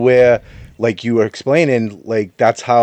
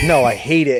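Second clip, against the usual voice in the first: exasperated, fed-up, frustrated, cutting tone; 3 semitones higher than usual. Retelling how Ray reacts when frustrated: imitating Ray's frustration. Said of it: "when Ray gets frustrated".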